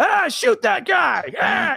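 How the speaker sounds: shrill, very high, drawn-out scream. Retelling how Gary Busey screamed at the stage: imitating Gary Busey screaming. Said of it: "screaming at the stage".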